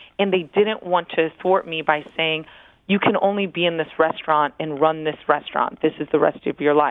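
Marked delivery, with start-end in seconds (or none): none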